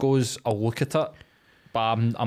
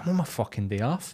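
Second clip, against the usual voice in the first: put-on irrational rage, mock fury; 4 dB quieter than usual. Speaker describes an inner reaction to messages on a day off, mock irrational rage. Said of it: "irrationally raging".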